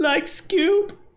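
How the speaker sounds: very high, squeaky, botched cartoon voice. Trying a quick impression for the others, a bad Shaggy impression. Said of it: "That was a shit impression".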